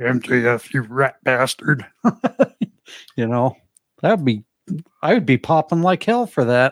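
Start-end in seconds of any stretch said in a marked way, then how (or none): 0.0-1.8 small, warped, distorted taunting voice. Imagining a taunt heard on a show, in a little distorted voice. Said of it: "in the little, you know, distorted voice".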